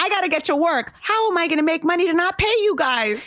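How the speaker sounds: mock, high, shrill complaining scream. Retelling a video shoot where Sonia Morgan screamed: imitating Sonia Morgan screaming. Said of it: "She screamed at me".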